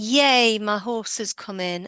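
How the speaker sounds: ordinary talk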